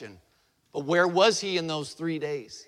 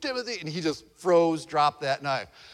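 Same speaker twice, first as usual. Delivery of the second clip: usual speaking voice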